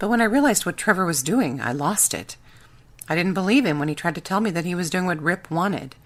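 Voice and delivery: ordinary talk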